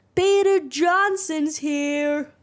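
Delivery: mock high-pitched yell. Retelling a scene where Mister D greets Percy: imitating Mister D yelling. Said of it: "when Mister D just yells".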